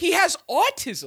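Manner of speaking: high, loud, incredulous shout.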